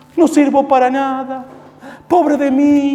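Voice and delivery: high, slow, whiny, self-pitying lament.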